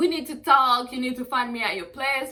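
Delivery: insistent, loud yelling. Retelling a phone call where she yelled at him: retelling own yelling. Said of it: "Why are you yelling?".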